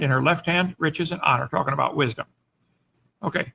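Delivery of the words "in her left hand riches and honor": ordinary talk, nothing marked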